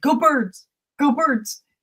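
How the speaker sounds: put-on high-pitched Delco accent. Speaker imitating how the fans greet each other, in a Delco accent. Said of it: "with, like, this Delco accent".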